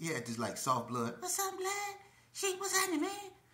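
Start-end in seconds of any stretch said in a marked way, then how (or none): 1.2-3.1 very high, soft, small little voice. Showing how Eazy Money used to greet people, in Eazy Money's little soft voice. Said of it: "He got this little soft voice".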